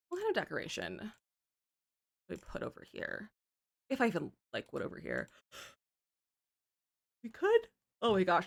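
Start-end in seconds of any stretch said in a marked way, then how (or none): 3.9-8.4 yawning while talking, words stretched by yawn. Speaker discussing what decoration to put on a wall: yawning while talking. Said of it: "excuse me for yawning".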